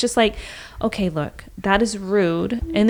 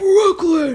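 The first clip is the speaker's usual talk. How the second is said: mock, startling, sudden, very high, loud, shrill yell; 10 semitones higher, 5 dB louder than usual. Retelling how Robert stopped a child hanging on doors: imitating Robert yelling. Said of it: "Please don't ever yell at me".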